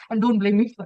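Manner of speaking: ordinary talk, nothing marked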